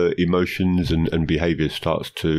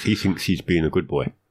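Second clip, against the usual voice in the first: ordinary talk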